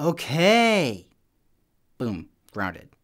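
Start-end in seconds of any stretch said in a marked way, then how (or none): 0.0-1.1 mock grudging, loud, drawn-out, sassy okay. Retelling being told a third time to clean his room, acting out a sassy okay. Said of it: "I definitely had some sass thrown into that okay".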